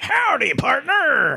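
put-on high, old-timey, old-west gold prospector character voice. Podcast host voices an imaginary listener greeting the audience: old-timey prospector voice. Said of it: "He happens to sound like an old-timey prospector".

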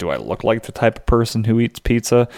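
ordinary talk

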